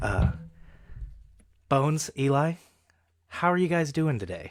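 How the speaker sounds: gentle, soft, hushed, sing-song ASMR voice. Opening the episode and greeting Bones and Eli, in an ASMR voice. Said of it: "so today I'm using my A S M R voice".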